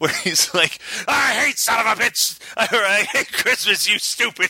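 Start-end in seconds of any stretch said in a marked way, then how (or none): 1.1-4.5 high, hammy, over-the-top overacting, laid on thick. Describing a movie's boss character, imitating his overacted shouting. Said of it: "overacting like a goddamn champ".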